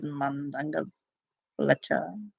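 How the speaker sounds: very quiet, low, hushed character voice under the breath. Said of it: "when Creature kind of goes".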